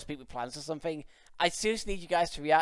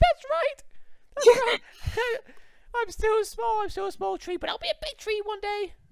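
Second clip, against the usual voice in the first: very high, tiny, small, squeaky voice; 3 dB louder than usual. Speaking for a young tree that is still small, little high-pitched voice. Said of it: "you just hear like a little high pitched voice".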